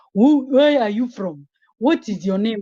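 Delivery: loud put-on South African accent. Retelling how strangers talk to her: imitating people doing a South African accent. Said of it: "they get into the mode of speaking South African accent".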